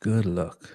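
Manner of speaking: sarcastic tone. Leaving a comment for a listener, checking how it sounds: sarcastic. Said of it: "Does that sound sarcastic?".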